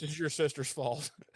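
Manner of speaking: fed-up, aggravated, threatening tone. Retelling a scene from last episode: imitating an aggravated man. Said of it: "he's just so aggravated".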